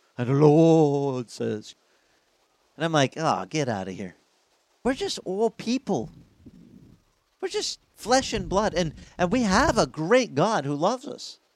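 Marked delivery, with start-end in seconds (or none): 0.2-1.8 put-on pious, sanctimonious preacher voice, loud and slow. Mocking people who talk as if they were always pure, in a mock holy voice. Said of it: "they put on the holy voice".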